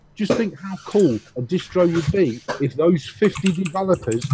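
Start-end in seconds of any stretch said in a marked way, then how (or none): none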